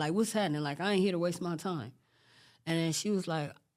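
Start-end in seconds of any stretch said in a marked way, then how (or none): none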